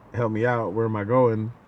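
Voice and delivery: plain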